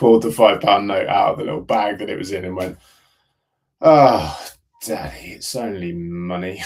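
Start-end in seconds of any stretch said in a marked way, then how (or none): 3.8-6.6 put-on very slow, drawn-out, disappointed delivery. Retelling what his two-year-old daughter said on finding a note: imitating his daughter's disappointment. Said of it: "She was so disappointed".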